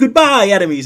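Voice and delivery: bright, upbeat, very chipper, high-pitched and loud. Speaker suggests a line for an anime ultimate attack: very chipper voice. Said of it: "in a very chipper voice".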